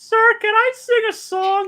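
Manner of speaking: very high, loud, put-on cartoon kid voice. Taking a turn in a bit as a character, Carl Wheezer voice. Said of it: "I'll do it as Carl Weezer".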